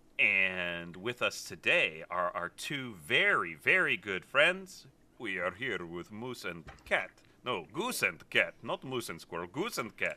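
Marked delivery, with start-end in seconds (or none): 5.2-10.2 fake Russian accent, quick and sing-song. A host introducing two guests makes a joke correction in a bad russian accent. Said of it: "Why are you doing a bad Russian accent?".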